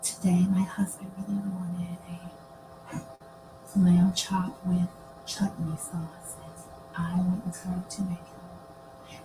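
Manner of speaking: slow, soft, hushed whisper. Explaining ASMR by imitating a creator's whispered video: imitating Nora Smith whispering. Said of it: "she whispers".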